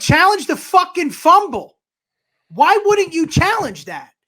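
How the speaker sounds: screaming. Speaker recalls screaming at the tv over an unchallenged fumble: retelling own screaming. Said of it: "I was screaming at the fucking T V".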